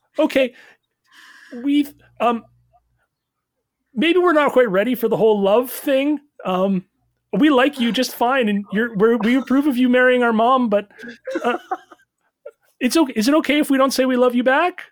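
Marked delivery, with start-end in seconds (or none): 4.0-14.7 put-on small young raccoon voice. Voicing three baby raccoons cheering for their new dad: baby raccoon voice. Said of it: "three small little baby raccoons".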